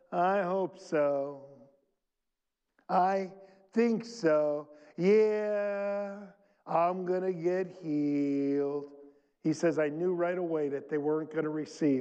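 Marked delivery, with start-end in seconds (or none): 0.1-8.8 very slow, drawn-out, acted doubtful and unsure tone. Speaker acts out how people sound who won't receive healing, imitating a doubtful tone. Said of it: "If the tone in their voice was".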